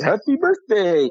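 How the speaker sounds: high cartoon snowman character voice. Quoting a familiar film line, Frosty the Snowman voice. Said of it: "Frosty goes".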